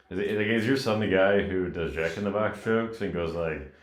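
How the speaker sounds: normal talking voice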